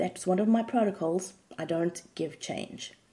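plain

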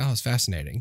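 plain

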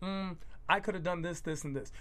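ordinary delivery

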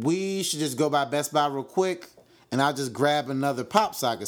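ordinary delivery

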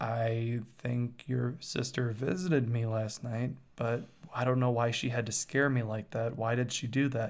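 ordinary talk

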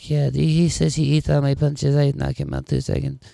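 put-on broken English, Portuguese accent, pitch pushed up, creaky. Imitating a fighter who speaks English as a second language: Anderson Silva impression. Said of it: "but you hear him talk".

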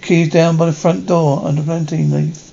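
ordinary talk

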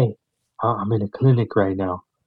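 put-on whisper. Retelling a phone call from someone at a clinic; imitating her whispering. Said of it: "She's like whispering to me".

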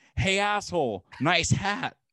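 mock rude, high, drawn-out yell. Retelling a friend screaming out a car window at a bald man: imitating a friend screaming. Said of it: "my friend screams out the window".

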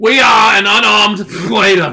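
put-on very loud, slow, drawn-out bellow in Boston accent. Voicing a line of a cartoon cat: Sylvester with a Boston accent. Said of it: "That's Sylvester doing a Boston accent".

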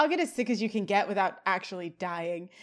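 normal talking voice

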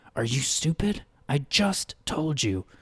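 fearful scolding. Narrator voices Peter scolding Wren after covering Wren's mouth, fearful scolding. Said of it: "With wide-eyed terror".

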